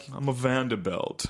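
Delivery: put-on aristocratic, blue-blood vampire voice. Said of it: "You're like a vampire all of a sudden".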